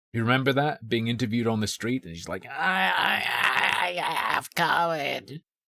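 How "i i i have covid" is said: very slow, high, crackly, halting voice. Recalling a viral street interview with an early covid patient, imitating a crackling voice. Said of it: "Her voice was all crackling".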